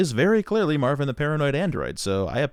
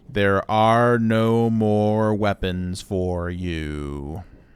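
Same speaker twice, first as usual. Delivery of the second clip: very, very slow, drawn-out words. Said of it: "let me say this very slowly".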